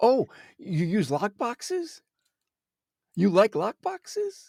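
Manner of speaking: excited, lively voice rising in pitch. Showing enthusiasm in a question about lockboxes, excited rising voice. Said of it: "Notice my voice went up?".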